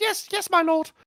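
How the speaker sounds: very high-pitched character voice, pushed way up. Discussing a book character's voice, the speaker imitates him: high-pitched character voice. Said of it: "he didn't make his voice high".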